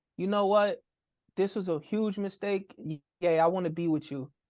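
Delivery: ordinary talk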